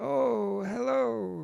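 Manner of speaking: put-on very high, rough, creaky old man voice. Demonstrating character voices, the speaker greets someone in a golden old guy voice. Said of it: "That was a golden old guy voice".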